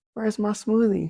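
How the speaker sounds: high, very quiet half-whisper. Telling a story about his wife, retelling his wife's half-whisper. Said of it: "I hear her whispering".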